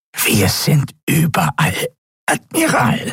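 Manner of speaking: croaky, pressed, nasal voice, pitched high. A narrator reading fiction voices Draxyl answering the admiral: croaky, pressed, nasal Draxyl voice. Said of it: "krächzte die gepresste, nasale Stimme des Draxyl".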